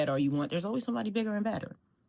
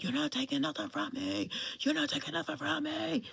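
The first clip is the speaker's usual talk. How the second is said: mock raw, ragged, rough, frantic scream, very high; 12 semitones higher, 3 dB quieter than usual. Retelling a car warning light on the highway: retelling a scream. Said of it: "I just start screaming".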